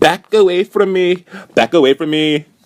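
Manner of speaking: loud, brash, ignorant-sounding, very high holler. Retelling how a woman reacted as a man walked over: imitating someone loud and ignorant. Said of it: "all loud and ignorant".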